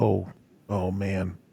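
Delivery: soft, quiet muttering. Voicing a man worried about his missing crew, muttering to himself. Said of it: "he kind of mutters to himself".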